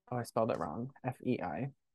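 barely audible, very quiet half-whisper. Checking something on the phone so as not to jinx it: half-whispering. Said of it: "I'm whispering because I don't wanna".

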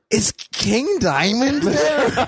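high-pitched, very slow, nervous, scared-sounding voice.

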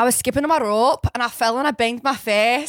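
put-on young girl's voice with Scottish accent. Retelling a Disney short about a girl from Scotland: imitating a Scottish girl. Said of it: "this was my slumber party impression".

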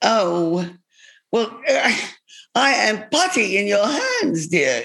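put-on old woman voice. Retelling how she was convinced to do the evening, answer in an incredible Maggie Smith accent. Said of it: "you do an incredible Maggie Smith accent".

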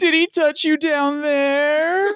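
high-pitched, put-on, sob-choked tearful voice. Retelling what a boyfriend said to his girlfriend, imitating someone sobbing. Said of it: "making like sob face and sob noise".

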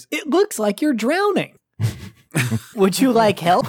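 high, loud, sing-song cartoon helper voice. Voicing the computer paperclip that appears on the reboot screen: voicing the computer paperclip assistant. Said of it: "and then the paperclip appears".

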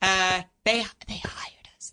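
soft, unvoiced whisper under the breath.

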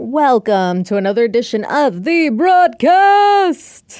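stylized, high, loud show-intro delivery. Host opening another edition of the show, in a stylized show-intro voice. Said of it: "I don't know why I say it that way".

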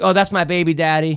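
ordinary talk, nothing marked

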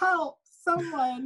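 put-on, very high, shrill, helpless damsel scream. Retelling screaming into the microphone while playing a camper: imitating own screaming. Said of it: "screaming, like".

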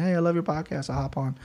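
put-on soft voice with a Brazilian accent. Speaker imagines a fighter hearing the podcast and replying, Mackenzie Dern Brazilian accent. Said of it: "in her Brazilian accent".

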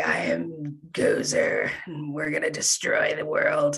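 low, slow, rough, gravelly raspy voice. Imitating strange figures who speak in a raspy voice, raspy voice. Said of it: "they've got this like raspy voice".

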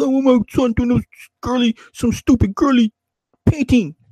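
mean, abusive, gruff ranting voice, very high. Retelling a sitcom father scorning his son's painting: imitating a mean, gruff father. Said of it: "He's all mean and gruff".

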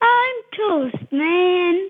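triumphant, excited, high voice, "Man" stretched out. Answering how the character Toast Man sounds saying his line: excited. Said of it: "How do you think he sounds when he says it".

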